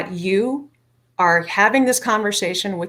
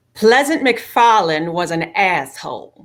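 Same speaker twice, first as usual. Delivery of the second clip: put-on lovely Southern accent; 3 dB louder than usual. Retelling what the speaker's aunt said about the family name, southern accent. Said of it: "in her brilliant, lovely Southern accent".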